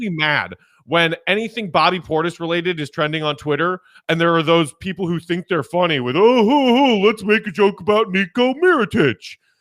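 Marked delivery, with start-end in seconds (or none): 6.2-9.3 loud, slow, mocking clueless caricature voice. Imitating fans who joke online about a teammate fight: impersonating dumb NBA fans. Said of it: "when I'm impersonating dumb N B A fans or dumb Bulls fans, I have to take that tone of voice".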